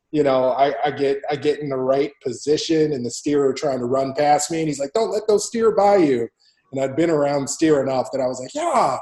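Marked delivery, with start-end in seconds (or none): 4.9-6.2 play-acted, loud, high-pitched screaming yell. Retelling what he yelled as the steer tried to run past, retelling a scream. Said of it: "he's like screaming at me".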